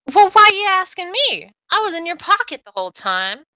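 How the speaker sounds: very high, squeaky, swooping little mouse voice shout. A game master voices a character crawling out of your pocket: high-pitched mousy shout. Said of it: "shout in her high-pitched, mousy little voice".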